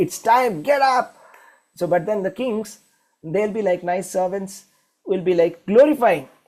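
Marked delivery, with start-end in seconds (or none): 0.0-1.2 high-pitched, slow, imitated put-on shout. Retelling how somebody wakes people up: imitating someone shouting. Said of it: "somebody will wake up us and will shout".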